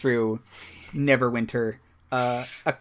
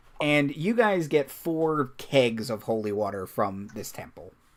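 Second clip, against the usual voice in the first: normal talking voice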